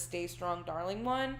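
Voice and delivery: normal talking voice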